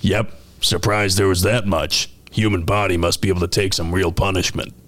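put-on alien voice. Retelling a scene, giving the reply about what was found, in Krogan voice. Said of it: "And the Krogan says".

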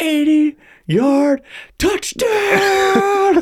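mock shrill, very high screaming. Retelling a football play as the quarterback yells at a defender, imitating Philip Rivers screaming. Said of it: "Like screaming at him".

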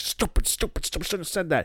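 flustered, giddy, high-pitched muttering. Retelling a wrestling segment, imitating John Silver being giddy. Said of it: "he's getting all giddy".

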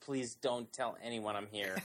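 mock begging, pretend pleading tone. Imagining being spotted at Cabaret: mock begging. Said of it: "I would be begging anyone around me".

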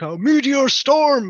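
shrill, very high, very loud shouted cry. Retelling the last boss fight: imitating a shout. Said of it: "he just shouts".

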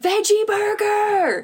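very high, shrill, loud screamed yell. Retelling how a woman turned around her shoulder and screamed, imitating someone screaming. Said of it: "just screams".

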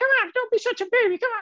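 upset, exasperated, very high falsetto. Retelling how he pushed you out to greet the guests, imitating Kamalaksha's upset falsetto. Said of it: "his voice goes falsetto".

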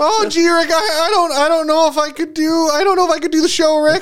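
squeaky voice, tripping and stumbling over words. Joking about your podcast audition with Adam, Morty voice. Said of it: "I can't even do a Morty".

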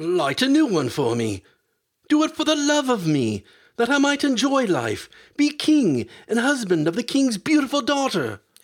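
very high, horror-struck voice, climbing and swooping. The physician begs his godfather, Death, horrified. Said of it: "said the horrified physician".

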